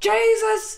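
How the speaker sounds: very high, shrill, loud yell. Retelling how a soccer announcer reacts to a player: imitating an announcer yelling. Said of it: "he yells".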